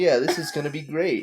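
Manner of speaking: gushing, passionate, eager, enthusiastic excitement. Retelling ordering sweet tea, acting out own passionate past excitement. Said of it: "The way you said that. You're, like, so passionate".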